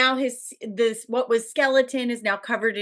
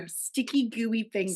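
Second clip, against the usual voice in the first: put-on seductive voice, quieter; 6 dB quieter than usual. Recapping a film scene, acting out a woman's reply: mock-seductive.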